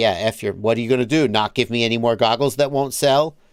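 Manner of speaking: fed-up, dismissive, brushing-off tone. Imagining what a shop owner would say about unsold goggles: imitating Serge. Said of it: "That's my impression of him".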